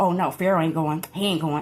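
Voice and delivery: spiteful, begrudging, dismissive, hating tone. Retelling what someone said in a video: imitating someone hating. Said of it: "on some hating shit".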